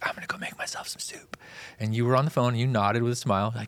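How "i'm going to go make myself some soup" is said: soft, breathy, half-whispered aside. Retelling a past remark to someone busy on the phone: retelling a whisper. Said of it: "I kinda whispered it".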